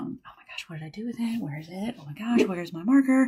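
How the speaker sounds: soft, under-the-breath muttering to herself. Retelling searching the room for a lost marker with the kids nearby, acting out quietly muttering to herself. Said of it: "talking to myself very quietly".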